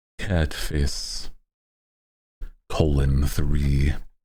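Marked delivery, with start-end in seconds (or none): 2.7-4.0 put-on masculine voice, much lower pitch. Saying the cat-face emoticon out loud, in your most masculine voice. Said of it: "I say in my most most masculine voice".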